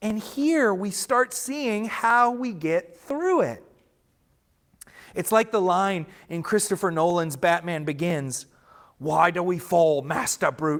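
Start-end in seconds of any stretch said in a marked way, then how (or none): 9.0-10.8 weird put-on British butler accent. Quoting a line from Batman Begins, the speaker tries a weird Alfred accent. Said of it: "I'm going to stop trying to do the weird accent".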